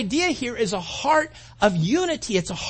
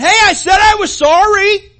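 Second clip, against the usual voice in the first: put-on, very loud, slow, drawn-out angry delivery; 8 semitones higher, 13 dB louder than usual. Retelling cutting off a driver who yells back: imitating an angry retort. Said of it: "kinda get angry in your heart going".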